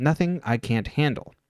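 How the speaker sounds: plain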